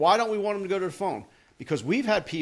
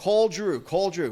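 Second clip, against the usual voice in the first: ordinary talk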